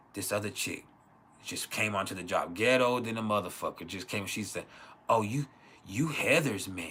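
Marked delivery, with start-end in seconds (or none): 5.1-7.0 mock sly delivery. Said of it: "saying it with a sly".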